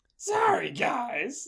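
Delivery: very high, loud, squeezed, gruff whine. Showing the others the Eddie voice: gruff, old, whiny. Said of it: "gruff and old and whiny".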